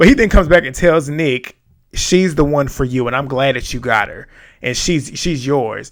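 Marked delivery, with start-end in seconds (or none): none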